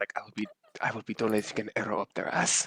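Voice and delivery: quiet muttering under the breath. Asked whether they stutter while whispering, showing how: muttered under breath. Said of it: "it's kind of under my breath".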